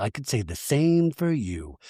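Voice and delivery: whispered under breath. Recapping a reunion, quoting a cast member's side comment, whispered under breath. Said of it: "Zach whispers under his breath".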